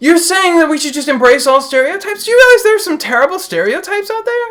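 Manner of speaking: very high-pitched, loud protesting tone. Objecting to the claim that stereotypes should be embraced: high-pitched and loud. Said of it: "That's really high-pitched and loud".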